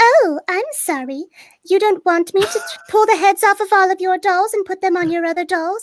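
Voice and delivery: put-on very high, shrill, creepy, haunted little girl doll voice. Demoing a voice from your reel: a creepy doll voice. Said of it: "it's like a creepy like doll voice".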